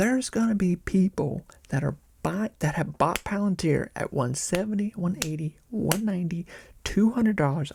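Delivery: hushed whisper. A speaker sitting back to watch things get out of control, whispering. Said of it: "I don't know why I'm whispering".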